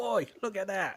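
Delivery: put-on London Cockney accent. Discussing where an accent is from, demonstrating an East End London accent. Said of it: "that's an East End of London accent".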